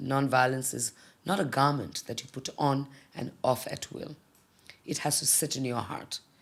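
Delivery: ordinary delivery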